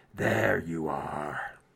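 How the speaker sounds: very deep, low, tinny, hollow echoing voice. Narrating the game, voicing someone inside a helmet: tinny hollow voice. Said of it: "tinny hollow voice from inside the helmet say".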